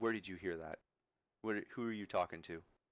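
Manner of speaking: low, confidential voice. Voicing a man who turns and looks at the listener, lowered voice. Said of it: "he lowers he lowers his voice".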